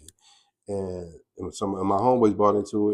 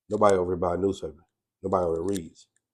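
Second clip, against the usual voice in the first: normal talking voice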